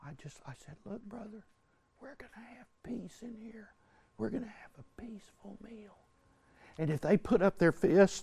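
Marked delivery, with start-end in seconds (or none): 0.0-6.0 very soft, very quiet, hushed talking. Retelling calming a man who cut in line: imitating own soft talking. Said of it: "I start talking real soft".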